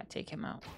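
very soft, stealthy whisper. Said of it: "Gotta whisper".

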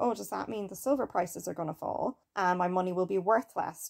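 ordinary delivery

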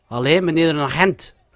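clumsy, bad put-on Flemish accent. Calling out for a police officer, poor attempt at flemish accent. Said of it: "Ik kan de accent niet zo goed nadoen".

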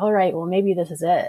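usual speaking voice

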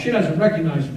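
ordinary delivery

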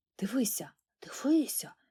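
soft, secretive, hushed whispering. Narrator voices two brothers looking at a pocketknife, whispering. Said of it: "шепотіли вони".

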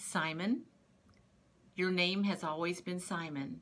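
plain

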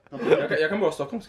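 ordinary talk

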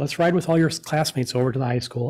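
normal talking voice

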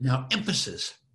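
ordinary talk, nothing marked

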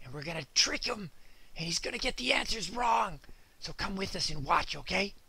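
very quiet, hushed, secretive half-whisper. Telling viewers a secret plan to trick Excite Dog, half-whispering. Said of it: "I've got to whisper because I've got a secret".

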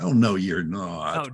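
slow, sweet Southern drawl in a lady's voice. Retelling what a lady said on hearing of atheism: sweet little Southern accent. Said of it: "sweetest little Southern accent".

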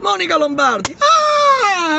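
mock shout while crying.

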